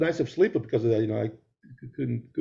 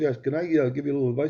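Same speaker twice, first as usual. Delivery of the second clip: ordinary talk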